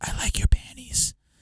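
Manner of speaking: soft, high-pitched whisper. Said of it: "you whisper in their ear".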